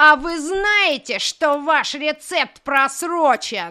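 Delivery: slow, loud, strict head-teacher voice.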